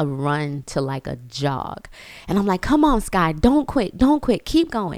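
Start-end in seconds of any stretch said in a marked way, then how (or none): 2.6-5.0 mock screamed, high, loud encouraging tone. Retelling cheering on a runner slowing down on the track, retelling screaming encouragement. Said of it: "I'm just screaming".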